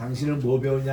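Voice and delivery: ordinary delivery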